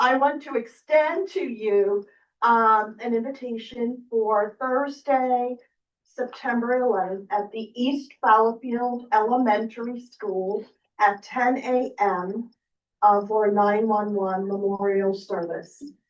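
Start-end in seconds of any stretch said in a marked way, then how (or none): 0.0-12.5 classroom-teacher delivery. Speaking up to address the representatives, using a teacher's voice. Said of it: "use my teacher's voice".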